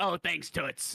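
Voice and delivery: high-pitched, heavy chain-smoking druggie voice. Imitating the other speaker's roleplay character thanking someone: heavy smoker voice. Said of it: "you sound like a fucking, like, a druggie that smoked, like, seventeen packs of cigarettes".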